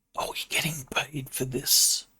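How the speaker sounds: soft, hushed whisper. A player's character leads the group into Caledon, whispering. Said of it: "he's going to whisper".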